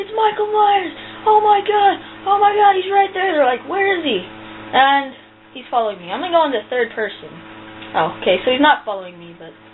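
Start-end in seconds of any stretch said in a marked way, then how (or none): 0.0-3.4 put-on shrill, very high, terrified shriek. Recounting a scary moment, retelling screaming to a friend in panic. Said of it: "I scream to my friend".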